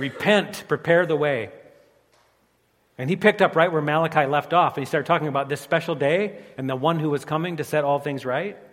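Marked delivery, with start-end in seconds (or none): 0.0-1.5 mock slow, drawn-out, crying-out proclaiming call. Retelling what a prophet proclaimed to prepare the way: retelling a shout. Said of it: "he cleared his throat and he shouted".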